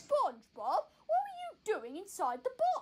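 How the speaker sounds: slow, drawled, sing-song cartoon voice with big swoops. Playing a game and asking SpongeBob about the box: Patrick Star voice. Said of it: "the Patrick voice".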